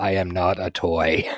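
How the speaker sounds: slow, drawn-out grumpy grumble in a little-guy voice. Describing Teddy, a little guy, and how he talks, imitating Teddy's grumpy voice. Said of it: "he's got this kind of grumpy voice and he's like".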